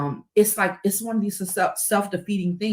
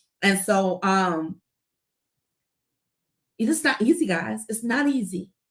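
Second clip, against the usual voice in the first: choked up, holding back tears. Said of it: "I just don't wanna feel it publicly".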